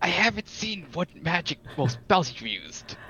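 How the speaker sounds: soft, half-whispered, under the breath. Answering a party member quietly, hiding it from the guard: half-whispering back. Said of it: "I whisper back".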